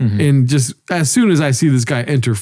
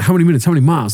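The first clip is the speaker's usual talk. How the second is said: mock rapid-fire, fast speech. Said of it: "She starts hitting me fast".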